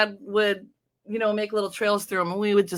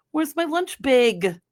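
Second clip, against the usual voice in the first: put-on Fargo accent with raised pitch; 6 semitones higher than usual. Recalling how they used to talk back in the day, in a Fargo accent. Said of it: "I used to talk like that with the accent like Fargo".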